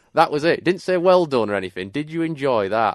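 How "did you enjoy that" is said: put-on broad Yorkshire accent, much higher pitch, slower pace. Speaker retelling granddad's words at the van door: broad Yorkshire accent. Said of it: "in the most Yorkshire accent and went".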